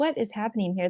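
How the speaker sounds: plain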